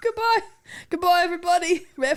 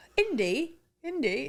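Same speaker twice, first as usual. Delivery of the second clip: put-on Egyptian accent in movie bad-guy style; 2 semitones lower, 4 dB quieter than usual. Asked to say goodbye like an Egyptian, trying a put-on Egyptian accent. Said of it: "what accent are we doing this week? ... Egyptian".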